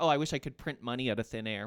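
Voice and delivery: ordinary talk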